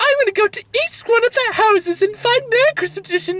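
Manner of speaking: put-on character voice pitched right up very high. Retelling what Olaf does in a movie, imitating Olaf's voice. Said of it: "I don't know why I'm doing this voice".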